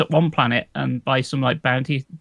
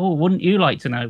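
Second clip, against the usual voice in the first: snide, snarky, sarcastic delivery; 4 semitones higher than usual. Retelling how game guards refuse to explain: imitating a snarky tone. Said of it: "sort of give you a snarky tone".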